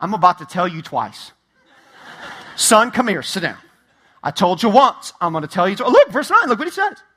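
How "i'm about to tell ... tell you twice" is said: low, stern, scolding fatherly voice. Acting out Paul as a dad calling his son over: dad telling his son off. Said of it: "This is him being dad going".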